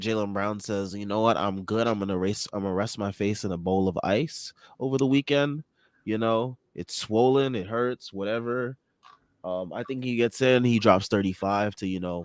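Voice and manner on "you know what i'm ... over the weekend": usual speaking voice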